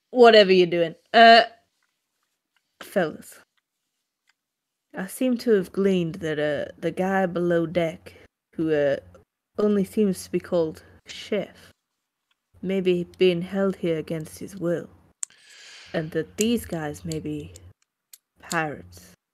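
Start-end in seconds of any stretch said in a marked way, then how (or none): 1.2-19.2 speaking in a whisper. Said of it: "I need to whisper this".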